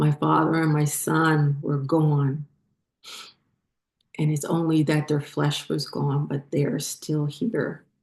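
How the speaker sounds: getting choked up mid-sentence, tearful. Sharing a personal memory, choking up. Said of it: "I'm sorry, I'm choking up".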